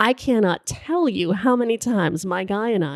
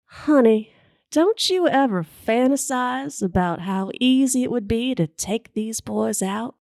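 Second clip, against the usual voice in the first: bad put-on Southern drawl, lowered voice; 4 semitones higher than usual. Quoting what she asked the speaker, in a bad put-on southern drawl. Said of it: "lowers her voice and asks me in that luscious southern drawl".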